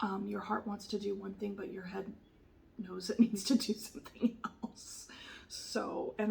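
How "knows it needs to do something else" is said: whispered with a small laugh. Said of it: "I don't mean to laugh".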